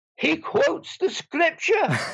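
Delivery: put-on Irish accent, pitched very high. Speaker quoting a woman amazed after reading Thomas Aquinas, imitating her Irish accent. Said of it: "said in her Irish accent".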